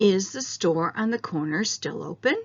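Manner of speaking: rising question tune, pitch climbing on open. Yes-or-no question example in an intonation lesson, rising intonation at the end. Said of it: "so my voice goes up".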